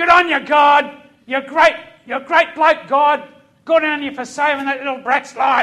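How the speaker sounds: high, loud yell. Telling a story about a man who heard the praying, retelling his yell. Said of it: "he yells out".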